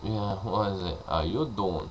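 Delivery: bad, clumsy, slow, drawn-out New York accent. Trying an American accent, the speaker lands on a bad Joey Tribbiani impression. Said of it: "Now that's Joey Tribbiani".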